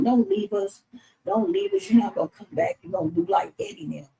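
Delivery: high, swooping, tearful, crying plea. Retelling begging someone not to leave them: retelling own past crying. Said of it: "So I'm crying".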